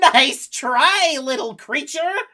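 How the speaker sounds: very high, very loud, shrill cackling villain voice. Voicing a character who resists a laughter spell and cackles: cackling villain taunt. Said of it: "and she cackles".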